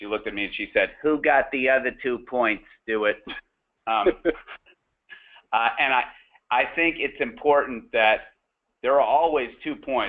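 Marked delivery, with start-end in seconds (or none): 1.0-3.2 put-on New York accent. Speaker quotes mom's reply to their third-grade score, imitating her new york accent. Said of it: "in her traditional New York accent".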